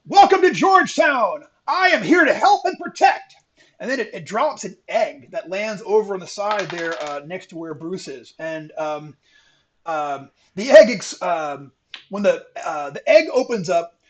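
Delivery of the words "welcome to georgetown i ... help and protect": very high, carrying call, yelled across. An enormous eagle hovering at the far end calls over to you, yelling across. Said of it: "It yells over".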